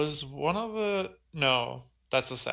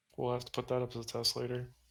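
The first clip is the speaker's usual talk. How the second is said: mumbling under the breath; 5 dB quieter than usual. In a roleplay, answering another character's claim to be a good pilot, mumbled under the breath. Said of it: "It's like a mumble under my breath".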